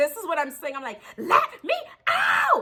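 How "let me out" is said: put-on, very high, shrill screeching scream. Recounting being stuck in a car with a driver, retelling a scream. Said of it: "I'm screaming".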